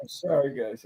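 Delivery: tearful, voice breaking, crying through words. Speaker talking about a friend he calls his kid brother, crying while speaking. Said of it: "I'm crying. I don't mean to cry".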